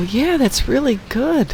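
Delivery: put-on high, slow, patronizing, as if to a child. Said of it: "we all patronizingly go".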